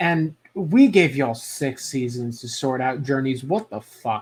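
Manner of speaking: ordinary talk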